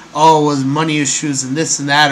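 ordinary talk

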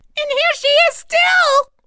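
very high, slow, delighted joyful squealing. The baby bear finds Goldilocks asleep in his bed, joyful squeal. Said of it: "squealed the baby bear joyfully".

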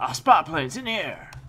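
very loud, high radio announcer callout. While gaming, echoing the in-game announcer's line: imitating the game announcer. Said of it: "I love that guy's voice".

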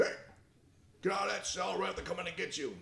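very high, rough, gruff would-be tough-guy voice. Retelling how the captain ordered an inmate out: imitating someone acting tough. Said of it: "he tried to be all tough".

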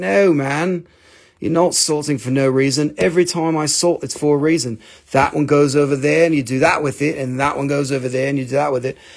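ordinary talk

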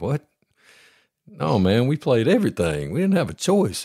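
incredulous, disbelieving, no-way tone. Retelling how players from Florida answered his question, with mock incredulity. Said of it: "you hear the incredulity in their voice".

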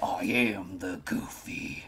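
slow, sinister, whispered drawl. Suggesting a funnier take on a line: sinister Goofy voice. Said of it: "It would be more hilarious if it was more sinister".

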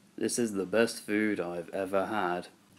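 low, flat, toneless, expressionless monotone. Showing how we actually sound, not how we think, flat monotone voice. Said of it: "here's what we actually sound like".

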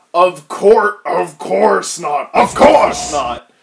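loud, booming, slow cartoon character voice.

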